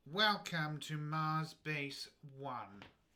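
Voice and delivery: very slow, deliberate, booming loudspeaker announcer voice. Voicing a base controller heard over a hidden speaker: base controller's voice over a speaker. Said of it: "And then you hear this voice".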